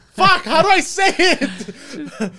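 high, slow speech through laughter.

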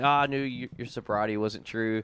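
ordinary delivery

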